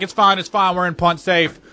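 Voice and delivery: plain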